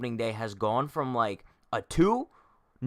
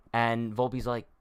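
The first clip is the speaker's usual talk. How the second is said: usual speaking voice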